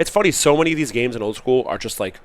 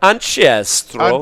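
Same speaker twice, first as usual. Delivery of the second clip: put-on thick Swiss accent, louder; 3 semitones higher, 7 dB louder than usual. Saying a card name the way Reindeer pronounces it: thick Swiss accent. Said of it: "how Reindeer pronounces Ancestral with his thick Swiss accent".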